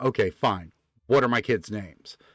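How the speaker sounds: ordinary talk, nothing marked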